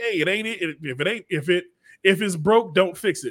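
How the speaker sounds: ordinary delivery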